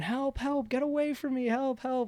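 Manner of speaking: mock, very high, shrill screaming. Retelling how a woman attacked nearby started screaming: imitating a woman screaming for help. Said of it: "she starts screaming".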